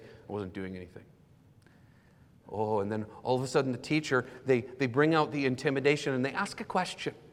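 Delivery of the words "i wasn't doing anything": put-on childlike mutter, much lower and quieter. The speaker acts out a pupil answering a teacher, muttered under breath. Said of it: "under their breath, kind of quietly".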